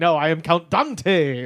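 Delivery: put-on insistent voice. Retelling how Count Dante denied his Irish roots: imitating Count Dante insisting. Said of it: "and he's just like".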